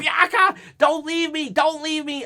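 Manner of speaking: mock yell at a very high pitch. Retelling a scene where one wrestler leaves crying: imitating someone yelling. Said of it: "she's yelling".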